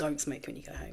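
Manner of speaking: hushed, very quiet, breathy near-whisper. Retelling a nurse's warning at the hospital, imitating someone speaking very quietly. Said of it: "she just very quietly said to me".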